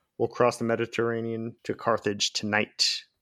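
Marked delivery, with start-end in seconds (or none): none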